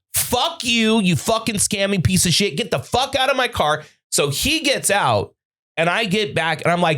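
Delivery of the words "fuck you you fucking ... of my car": acted-out furious, fuming rant. Retelling throwing a scammer out of the car: retelling a furious outburst. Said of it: "I was fucking fuming".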